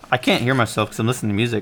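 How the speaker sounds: ordinary talk, nothing marked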